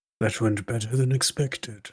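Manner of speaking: hushed whispering voice. Voicing a character who strokes a horse and speaks quietly: whispering in character.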